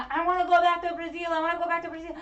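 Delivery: acted, shrill, loud, repeated screaming fit. Retelling how she busted out of the ambulance: imitating someone screaming. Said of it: "she's just screaming".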